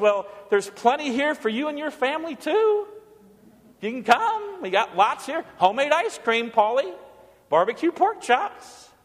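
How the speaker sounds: put-on honeyed, sweet, coaxing, inviting tone. Speaker retells what their mom said to them, imitating mom's sweet voice. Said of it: "my mom said in her sweet voice".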